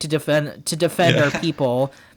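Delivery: ordinary talk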